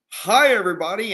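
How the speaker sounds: high game show announcer voice, addressing a crowd. Retelling how a man greeted the audience at a show, in a game show announcer voice. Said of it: "in that same announcer voice".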